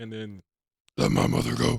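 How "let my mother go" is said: imitated deep voice. Retelling a scene where characters use the Voice: imitating the deep Voice. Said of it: "using the voice".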